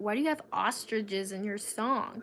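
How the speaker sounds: usual speaking voice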